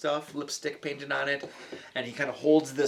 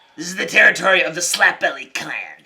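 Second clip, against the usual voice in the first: goblin voice, much higher and louder; 4 semitones higher, 13 dB louder than usual. Storyteller voicing a goblin confronting the players, in a goblin voice. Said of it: "It is it is Goblin".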